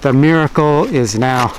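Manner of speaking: normal talking voice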